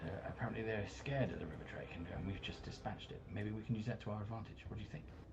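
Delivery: quick, quiet whisper.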